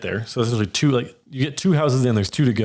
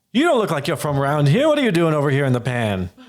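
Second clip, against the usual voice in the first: put-on old goblin woman voice; 3 semitones higher than usual. Narrator voices a goblin woman on her porch greeting a newcomer: elderly goblin woman voice. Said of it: "you see an elderly goblin woman".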